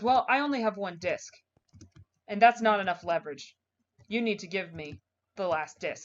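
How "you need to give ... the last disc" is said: ordinary talk, nothing marked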